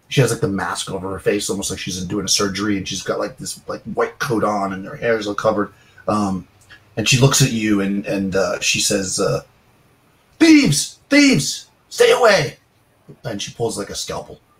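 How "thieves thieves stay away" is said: very high, shrill, drawn-out screaming. Voicing an old lady who sees intruders and pulls a scalpel: screaming. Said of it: "She stops screaming".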